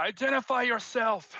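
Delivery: shrill, very high, loud shout. Voicing Eric, who looks out at a stranger: yelling. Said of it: "Eric also looks out and yells".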